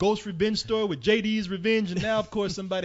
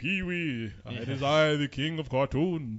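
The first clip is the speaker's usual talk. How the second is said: put-on deep regal voice, pitched lower; 4 semitones lower than usual. Retelling how a TV character greeted Pee-wee: deep King of Cartoons voice. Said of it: "he'd have a deep voice like this".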